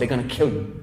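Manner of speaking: urgent, low, hushed muttering under the breath.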